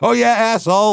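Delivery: shrill, very high, furious outburst. Retelling a phone call where a man curses the caller: imitating an angry man. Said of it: "he's just pissed".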